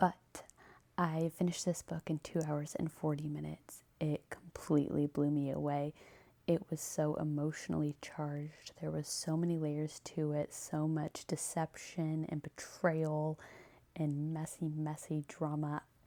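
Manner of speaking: hushed whisper. Reviewing a book at night while her husband sleeps, whispering. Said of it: "I kind of have to whisper".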